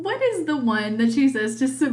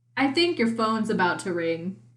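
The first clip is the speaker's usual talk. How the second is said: ordinary talk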